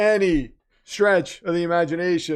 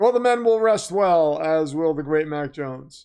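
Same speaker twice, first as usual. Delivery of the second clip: usual speaking voice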